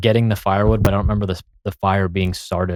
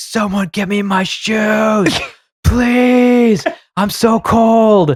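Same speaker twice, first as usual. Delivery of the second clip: put-on desperate shriek, very high, loud, drawn out; 13 semitones higher, 5 dB louder than usual. Telling a story about a man lying outside without shoes, retelling his desperate scream. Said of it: "and he's just screaming".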